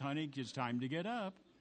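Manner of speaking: put-on very gentle voice. Retelling how their wife wakes them each morning, imitating her very gentle voice. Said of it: "very gently says".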